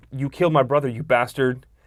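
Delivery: near tears, almost crying. Retelling a scene from the TV miniseries, imitating someone near tears. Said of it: "on the verge of crying".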